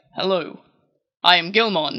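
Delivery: weirdly mature, grown-up, serious-sounding cartoon dub voice. Describing the English dub, the speaker imitates Gilmon: weirdly mature voice. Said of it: "a weirdly, like, mature voice".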